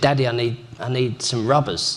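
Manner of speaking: ordinary delivery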